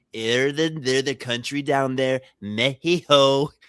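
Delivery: little, small put-on voice. Retelling a clip about Mexico: imitating Donald Trump's little voice. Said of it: "then he does that little voice, and he goes".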